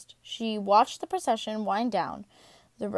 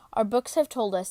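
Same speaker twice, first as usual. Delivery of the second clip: plain reading voice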